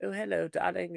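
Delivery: put-on kindly sweet high elderly voice. Describing what a character was expected to say, put-on sweet old person voice. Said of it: "like when it's a sweet old person voice".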